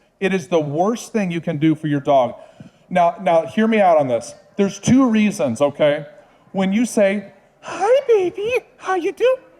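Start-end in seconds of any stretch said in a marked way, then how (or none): 7.6-9.4 put-on very high, slow, animated baby talk. Explaining how owners talk to their dogs: high, animated puppy-talk voice. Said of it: "Talk in a high-pitched, animated tone of voice. ... That is a puppy sound".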